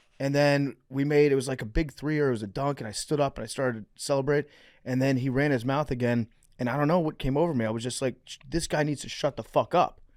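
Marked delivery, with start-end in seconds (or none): 8.3-9.9 yelling. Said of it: "after I yelled at him".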